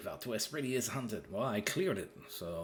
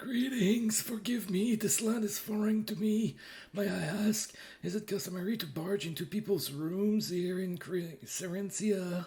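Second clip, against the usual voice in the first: put-on very high-pitched, raised old man voice; 10 semitones higher, 5 dB louder than usual. Voicing a scene's dialogue aloud: old man's voice. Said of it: "I have to take my old man's voice".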